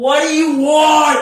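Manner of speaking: very loud, very high-pitched booming call. Game master voicing a teleporting creature: booming voice. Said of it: "Booming voice".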